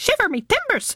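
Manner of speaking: very high-pitched, squawking parrot voice. In a pirate story game, a character answers the roar: Rumbucket's squawk. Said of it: "squawked Rumbucket".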